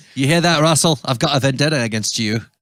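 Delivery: put-on Scottish accent, very loud and high. Podcast host jokingly addresses an actor they were discussing, Scottish accent. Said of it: "That was a Scottish accent".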